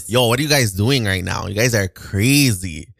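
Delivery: casual Toronto accent, very drawn out. After asking friends if they've heard the Toronto accent, the speaker does it: Toronto accent. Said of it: "You guys have heard the Toronto accent".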